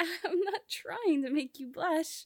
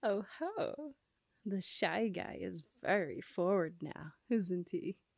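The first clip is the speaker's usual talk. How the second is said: very low, jokey, playful teasing; 9 semitones lower than usual. Asked which series is their favorite, the speaker teases the shy questioner: playful teasing. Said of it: "I'm only teasing you".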